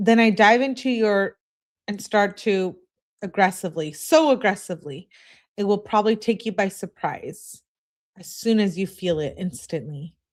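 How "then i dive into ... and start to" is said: plain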